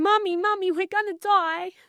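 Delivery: put-on frantic, tearful, high, panicked crying child's voice. Retelling what a son cried during a car chase: imitating a screaming, crying child. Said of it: "my son is screaming, crying".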